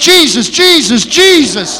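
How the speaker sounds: screaming, repeated again and again. Speaker retells hooking a huge fish on the line, retelling screaming. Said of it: "I'm screaming".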